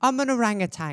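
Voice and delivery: put-on sweet, cute, high little British accent. Retelling their own past answer to a question, in a cute little British accent. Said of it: "I had like a cute little British accent".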